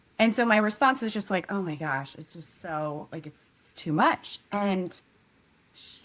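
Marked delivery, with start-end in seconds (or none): 1.5-4.4 deeply distraught, overwhelmed, at a loss. Retelling own reply to a friend at a coffee shop: retelling own distraught reply. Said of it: "deeply distraught by what was happening".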